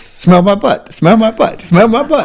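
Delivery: put-on, tiny, squeaky, very high little dog voice. Retelling a pet video, voicing the dog that sits on the cat's face, little dog voice. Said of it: "she put this little voice with it".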